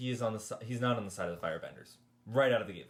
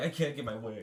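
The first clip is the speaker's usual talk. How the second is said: whiny, spoiled-brat complaining tone. Mocking a show character who is constantly whining: imitating whiny Zuko. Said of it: "he's constantly whining about everything".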